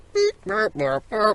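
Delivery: soft, high mechanical robot beeps. Podcast host told to act like a robot, now doing the robot voice. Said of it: "I'm doing the robot now".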